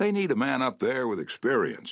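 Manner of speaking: high, wide, jovial, coaxing tone.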